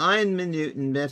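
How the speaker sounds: terrible, clumsy, put-on British accent. Pausing mid-task and talking to himself, in a bad British accent. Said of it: "I keep doing it with a British accent".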